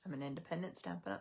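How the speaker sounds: rushed out fast in one breath. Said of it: "Can't get it all out in one breath".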